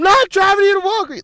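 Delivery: very high, loud, high-pitched screaming yell. Retelling refusing to drive a guy to walgreens: retelling own screaming.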